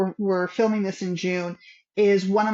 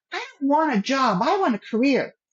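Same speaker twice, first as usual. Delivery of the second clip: mock bold, high, ringing shout; 6 semitones higher than usual. Retelling a shout on the walk to school in seventh grade: retelling a past shout. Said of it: "And I shouted out".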